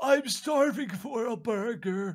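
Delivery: put-on elderly man voice. Playing a game and voicing the janitor character, in an old man voice. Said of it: "I love your old man voice".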